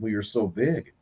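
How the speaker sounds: usual speaking voice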